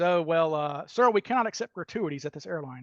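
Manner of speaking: ordinary delivery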